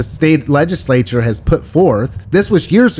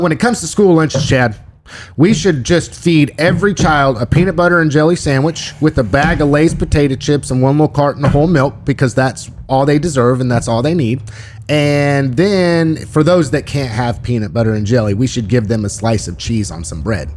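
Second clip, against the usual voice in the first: usual speaking voice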